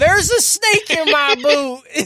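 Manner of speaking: high, booming pull-string doll voice, slow and loud. Quoting a pull-string cowboy doll: Woody doll voice. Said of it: "you know how Woody goes".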